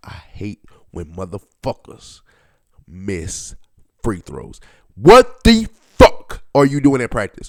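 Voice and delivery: abrupt switch to low, loud, irritated tone. Speaker ranting about players who miss free throws, suddenly changed tone. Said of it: "Do you hear the tone of my voice that just changed?".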